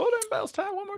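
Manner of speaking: race announcer calling style, pitched high. Asked to imitate a man with a distinct voice, after saying you can't, Larry McReynolds impression. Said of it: "Can you do a Larry Mc McReynolds impression".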